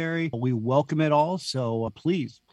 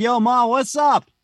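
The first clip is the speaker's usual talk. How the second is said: put-on New Jersey accent, very loud, drawn out; 9 semitones higher, 8 dB louder than usual. Retelling how he greeted his mother when home from school break, in an imitated New Jersey accent. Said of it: "I started talking like this".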